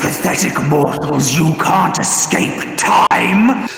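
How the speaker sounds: loud, furious, angry roar. Voicing a furious creature roaring at the players: furious roar. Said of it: "It roars angrily at you".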